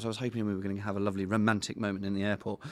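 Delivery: plain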